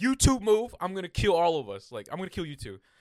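acted stressed tone. Retelling what he told two men he strapped into the seat, retelling a stressed threat. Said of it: "I was like super like stressed out".

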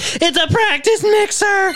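very high-pitched, long drawn-out voice. Announcing the item being shown, sounding like Shaggy. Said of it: "Why did that sound, sound like Shaggy?".

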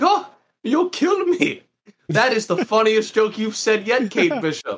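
very high, amused, laughing, scoffing taunt. Retelling a scene where Yelena laughs at a threat: imitating Yelena laughing. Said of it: "she starts laughing. She's like".

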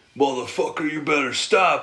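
threatening tough-guy voice, acting hard. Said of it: "was acting hard".

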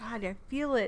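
ordinary talk

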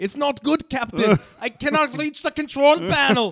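very high, shrill, awful put-on Scottish accent. Quoting a line from a Star Trek parody: awful fake Scottish accent. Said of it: "That's an awful, awful Scottish. accent".

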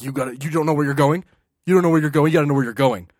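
very loud, harsh, acted scolding, yelling like an officer. Retelling how a customs officer laid into a traveler: imitating an officer scolding someone. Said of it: "freaking laid into her".

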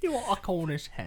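put-on British accent, pitched high. Repeating another speaker's question during a joking waiter bit, in a british accent. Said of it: "Why did you make the Cornish hen British?".

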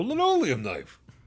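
peppy, zingy delivery. Showing how it sounds when trying to be upbeat: upbeat zesty voice. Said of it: "What if I tried to sound a little zesty?".

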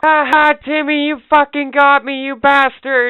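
high-pitched, loud scream.

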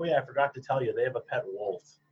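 ordinary talk, nothing marked

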